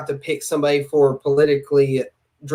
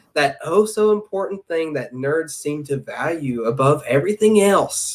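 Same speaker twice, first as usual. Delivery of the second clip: snooty, mocking, condescending talking-down tone. Imitating his remark that world building matters, in a mock-condescending tone. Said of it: "I think I'm doing a good job at imitating his condescending tone".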